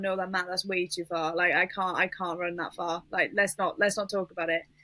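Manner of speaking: ordinary delivery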